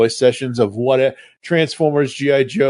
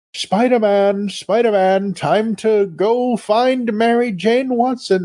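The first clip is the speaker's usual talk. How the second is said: very high, mystical female voice; 9 semitones higher than usual. Retelling a cartoon scene with a female character: imitating an amazing mystical female voice. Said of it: "this amazing mystical voice".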